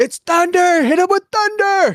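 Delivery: very high-pitched, shrill, yelled battle call. A player takes their character's turn in the game, yelling as Godwin. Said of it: "Godwin's gonna yell out".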